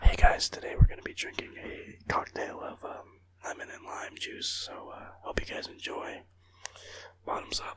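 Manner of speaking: soft whispered ASMR-style delivery. Testing new mics before drinking lemon and lime juice, mock asmr intro. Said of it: "I'll do an ASMR for you guys".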